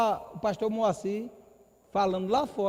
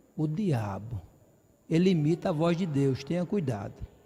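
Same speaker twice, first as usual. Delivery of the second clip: confiding, secretive, hushed-secret tone; 6 semitones lower than usual. Giving the brothers a warning tip, speaking very softly. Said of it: "Essa eu vou falar baixinho".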